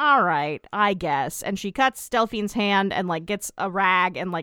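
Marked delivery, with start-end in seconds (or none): 0.0-1.4 put-on slow, reluctant, begrudging tone. Retelling a character agreeing to help: imitating begrudging agreement. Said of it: "begrudgingly is like".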